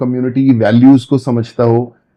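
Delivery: ordinary delivery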